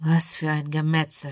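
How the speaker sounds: near-reverent tone. Rudolf, watching the slaughter below, speaks almost reverent. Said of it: "sagte Rudolf beinahe andächtig".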